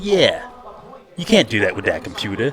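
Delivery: eager, keen voice chiming in with swooping pitch. Imitating the other speaker backing someone else up: eager backup voice. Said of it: "Biff's backup".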